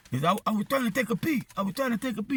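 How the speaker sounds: put-on Spanish accent, struggling, halting English. Retelling what a man who got off his bike said, in a spanish accent. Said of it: "That's what the accent sounds like".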